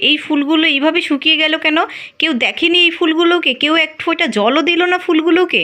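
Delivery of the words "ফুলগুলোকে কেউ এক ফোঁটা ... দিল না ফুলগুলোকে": ordinary delivery, nothing marked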